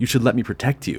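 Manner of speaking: plain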